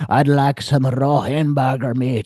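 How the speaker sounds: put-on Scottish accent. Retelling a creepy man's line at a diner, in a scottish accent. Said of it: "Why did he turn Scottish?".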